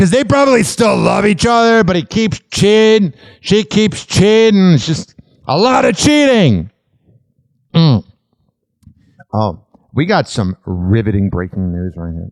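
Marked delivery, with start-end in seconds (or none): 9.3-12.3 dripping with irony, sarcastic. Announcing celebrity gossip as big news: sarcastic. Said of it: "This is sarcasm".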